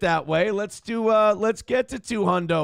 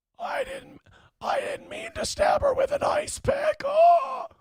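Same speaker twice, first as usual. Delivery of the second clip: very high, teary, weepy killer voice. Trying a high, weepy voice to show it no longer works. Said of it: "the weepy voice killer effect going on".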